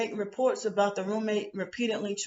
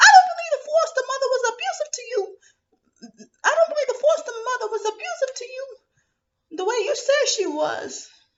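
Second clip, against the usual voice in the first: put-on New York accent, high, shrill and loud; 7 dB louder than usual. Quoting someone who, during an argument, doubted the foster mother's abuse: New York accent. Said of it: "the New York accent".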